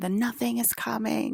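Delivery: mock booming monster-voice yell, loud and high. Describing being woken by a scream in the night, Colin Farrell's loud Atreyu voice. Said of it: "in his, like, really loud, like, Atreyu voice".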